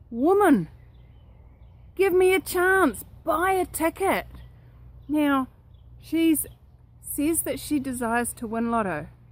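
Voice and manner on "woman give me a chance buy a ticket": thunderous, booming, raised heavenly voice. Retelling how a voice answers a woman praying daily to win lotto, booming. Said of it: "this voice booms out".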